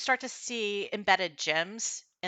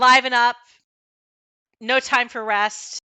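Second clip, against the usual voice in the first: gruff, barked shouting, much louder; 6 semitones higher, 9 dB louder than usual. Describing the sounds of labor to listeners, voicing commands as gruff shouted commands. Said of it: "a gruff voice shouting commands".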